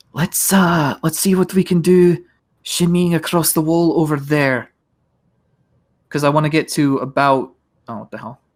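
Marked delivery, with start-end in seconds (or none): 0.2-4.7 hushed whisper, higher. Whispering in character to the group about shimmying along a wall: whispering. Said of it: "I'm also going to whisper back to everyone".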